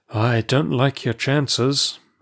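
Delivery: worn out, weary, tired. The narrator replies to Amasis after his request for secrecy, weary. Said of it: "I answered wearily".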